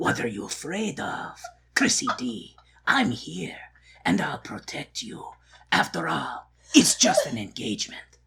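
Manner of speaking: breathy, hushed, soft voice. Retelling the movie, voicing Raoul reassuring Chrissy D: Raoul voice. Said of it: "that Raoul voice".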